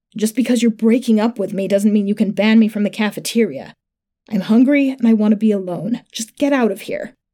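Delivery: plain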